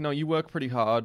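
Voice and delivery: plain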